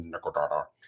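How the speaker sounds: low, soft little character voice. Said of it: "you hear this awesome little voice going".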